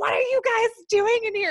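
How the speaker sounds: furious, loud, very high-pitched voice. Retelling what the building manager said: imitating an angry building manager. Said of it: "so mad".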